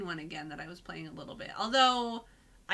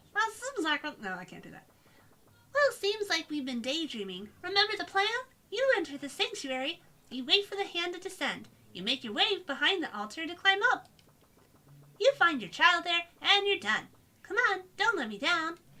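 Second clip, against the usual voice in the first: borrowed companion-guide sidekick character voice; 10 semitones higher than usual. Voicing a game character's lines: Paimon voice. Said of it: "the voice I was giving Paimon".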